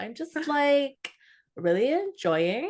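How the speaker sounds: climbing pitch, drawn out. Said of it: "I'm gonna stop doing that now".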